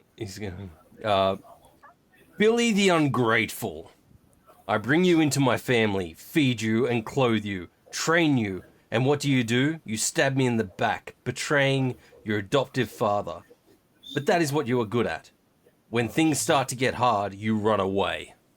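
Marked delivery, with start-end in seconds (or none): 2.4-18.3 big, loud, booming tirade. A character turns on the adopted son who betrayed him, in a booming voice. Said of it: "he's gonna go in this booming voice".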